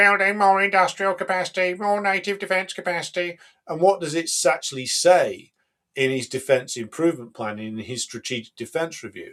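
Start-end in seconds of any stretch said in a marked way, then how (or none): 0.0-3.4 flat, high, level, machine-like monotone. Mocking a politician's speech about defense spending: imitating Starmer's robotic voice. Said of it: "in his ro-, robotic voice".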